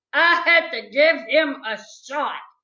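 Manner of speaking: ordinary delivery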